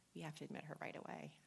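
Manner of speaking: mock hushed whisper. Retelling what a doctor said to a nurse: imitating a hushed whisper. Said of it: "I hear the doctor whisper to the nurse, really hushed voice".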